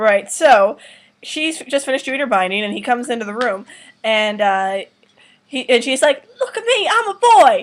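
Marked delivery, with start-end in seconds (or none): 6.4-7.6 high, slow, put-on British accent. Describing a scene, quoting a woman's line in her British accent. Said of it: "she has a British accent".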